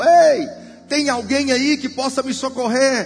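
high, loud, desperate crying out.

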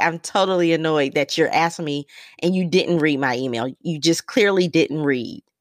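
plain

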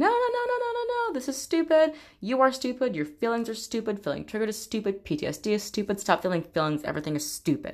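put-on shouting. Retelling the inner voice heard after a diagnosis: imitating an inner voice shouting. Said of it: "little internalized abuser voice shouting".

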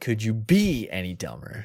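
swooping sing-song delivery with pitch swinging all over. Joking about reacting while watching shows: Chandler voice. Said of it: "the Chandler voice".

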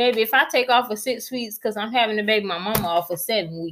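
ordinary delivery

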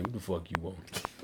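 very low, quiet put-on bored grumble. Acting out a Build-A-Bear worker with no enthusiasm: mock unenthusiastic worker. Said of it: "ain't no enthusiasm".

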